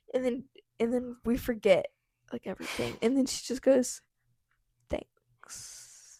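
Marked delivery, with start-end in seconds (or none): 4.9-6.2 faintest, barely audible whisper. Retelling what a girl at a sleepover said: imitating a very quiet voice. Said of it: "In the quietest voice possible".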